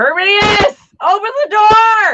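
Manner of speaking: loud, shrill, high yell with "door" stretched long. Calling to herminius to open the door: yelling. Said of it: "I'm yelling".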